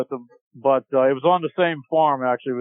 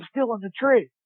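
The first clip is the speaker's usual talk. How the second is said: put-on whisper, higher pitch; 8 semitones higher than usual. Retelling a friend answering the phone from a tree: imitating someone whispering. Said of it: "he answers the phone, like, whispering".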